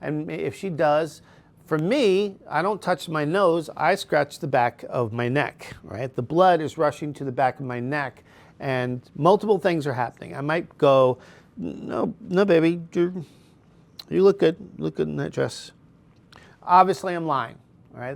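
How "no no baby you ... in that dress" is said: slow, stammering, drawn-out words in a higher pitch. Showing how they sound while lying to her, slow stuttering speech. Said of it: "I'm slowing my words, right? I'm stuttering".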